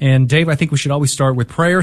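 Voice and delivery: ordinary talk, nothing marked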